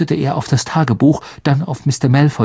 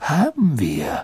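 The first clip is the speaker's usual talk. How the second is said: said with a smile; 6 dB quieter than usual. Dumbledore answers Mr. Malfoy's sneering question; smiling. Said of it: "sagte Dumbledore mit einem Lächeln".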